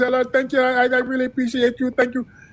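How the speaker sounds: fake Indian accent, high. Retelling how Kamala switches accents for audiences: Kamala's mock Indian accent. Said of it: "She gets in front of East Indians".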